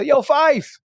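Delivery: put-on very high, shrill frat-boy holler. Retelling calling out to someone walking away: imitating himself yelling. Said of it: "So I yell".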